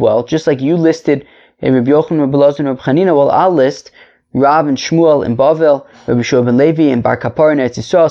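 ordinary talk

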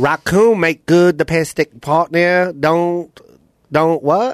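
put-on accent from Vietnam. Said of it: "Okay, so that's Vietnamese".

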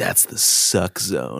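odd, weird-sounding whisper. Recounting a weird character's line, imitating a whisper. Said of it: "He like whispers it in".

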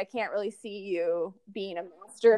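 put-on snide tone. Recapping a scene with a co-host, mock-snide Laurel line. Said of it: "Laurel says very snidely".

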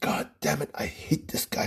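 imitated muttering under breath. Retelling what a friend muttered during a movie: imitating cursing under breath. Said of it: "couldn't stop cussing under his breath".

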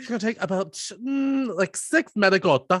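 thick put-on Italian accent. Imitating a girl giving cooking instructions, in a heavy Italian accent. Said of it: "this heavy Italian accent".

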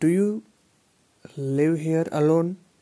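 emphatic, strongly stressed delivery.

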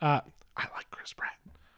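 soft, unvoiced, confiding whisper.

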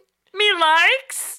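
very high-pitched creature voice talking backward. Imitating Yoda after calling a dog a baby Yoda: Yoda voice. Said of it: "Or however Yoda talks".

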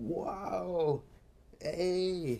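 excited, high-pitched screeching. Mocking an overexcited e3 audience member, mimic him screeching. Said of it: "just screeching, like".

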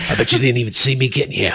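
put-on low, deep, dropped British Cockney accent. Acting out a clone trooper unmasked as Jason Statham: Jason Statham impression. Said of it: "It's Jason Statham. He's like".

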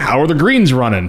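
put-on, heavily sarcastic, dripping tone. Acting out a pro shop guy greeting a golfer, mock-sarcastic and purposely loud. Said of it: "like basically like that. Just really sarcastic".

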